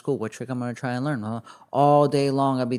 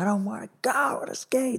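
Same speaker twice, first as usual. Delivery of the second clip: put-on very high, whiny, sulking, childish tantrum voice; 10 semitones higher, 4 dB quieter than usual. Recalling being pulled away from skating for holidays, imitating own temper tantrum. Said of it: "I would throw temper tantrums".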